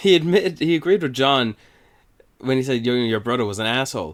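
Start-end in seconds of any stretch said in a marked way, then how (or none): 3.0-4.1 line in a put-on American accent. Quoting what someone said about a brother: American accent. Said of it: "I said that in an American accent".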